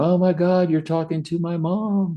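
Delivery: very high-pitched, teary, crying breakdown voice. Retelling a person's reaction to someone channeling their dead mom: imitating someone crying. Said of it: "the person just starts crying, going".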